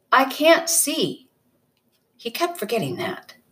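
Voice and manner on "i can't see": angry, frustrated, pitched-up tone. The narrator answers the man pointing out an island, angrily. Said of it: "Angrily, I said to him".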